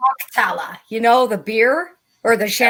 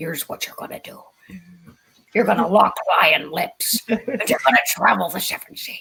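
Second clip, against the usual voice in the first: put-on Irish accent; 3 semitones lower than usual. While trying out names aloud, slip into your Irish Liam Neeson voice. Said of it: "going into my Irish Liam Neeson voice".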